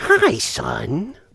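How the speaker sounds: casual, fatherly tone, sounding proud. Acting out a scene where the Joker's father greets him: as the Joker's father. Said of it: "and he's like".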